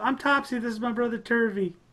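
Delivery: very high, squeaky, tiny gnome voice. Playing a gnome introducing a brother, in a high-pitched Topsy gnome voice. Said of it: "you hear a high pitched voice".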